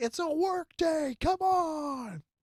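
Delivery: put-on shrill, grumpy old man holler, on stretched. Retelling an angry old grandpa yelling at his neighbors, mock-angry yell. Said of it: "he's like yelling at his neighbors".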